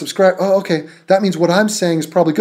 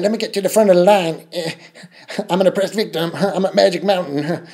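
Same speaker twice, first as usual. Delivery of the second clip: put-on cartoon character voice. Mocking people in a video with a put-on voice: Cartman voice. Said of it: "put a Cartman voice on".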